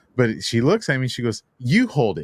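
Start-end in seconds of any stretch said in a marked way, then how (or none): 1.6-2.3 acted, firm, very stern, no-nonsense voice. Retelling a pet store lady handing over a cat: imitating a stern order. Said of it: "very stern".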